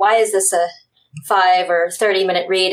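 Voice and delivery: ordinary delivery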